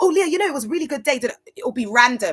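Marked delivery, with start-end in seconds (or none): 0.0-1.2 put-on very fast, rapid talking, pitched higher. Retelling how a church member spoke to the speaker: imitating very fast talking. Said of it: "speaking at, like, a hundred miles an hour".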